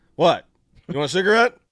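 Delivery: very loud, high, stern, fatherly scolding tone. Retelling how a big guy answered an angry man: imitating a dad scolding a child. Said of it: "he was like a dad".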